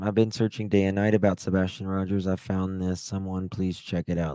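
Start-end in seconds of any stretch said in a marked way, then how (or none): none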